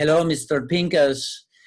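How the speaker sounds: disguised voice with bad fake Puerto Rican accent. Retelling phoning a man at home, greeting him in a disguised voice, bad Puerto Rican accent. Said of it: "I disguised my voice".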